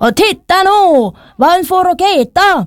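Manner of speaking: ringmaster-style high, drawn-out shouting. Storyteller voices a circus director calling out again, shouting. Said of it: "ropte sirkusdirektøren igjen".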